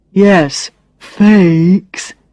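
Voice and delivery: speaking very slowly, condescending. Reading Brad's reply to the narrator's echoed question: very slow, as if to a child. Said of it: "he says very slowly, as if I'm a child".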